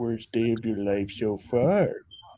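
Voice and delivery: cartoonish father voice. Recalling a movie with a friend, the speaker quotes a line in Homer Simpson voice. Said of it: "[name]'s a perfect impression of Homer".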